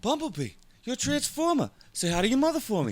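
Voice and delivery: very high, loud voice with pitch swooping around. Doing a line as Andy Samberg imitating Mark Wahlberg: Andy Samberg doing Mark Wahlberg. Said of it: "That was me doing Andy Samberg, doing Mark Wahlberg".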